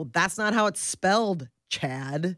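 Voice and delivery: ordinary talk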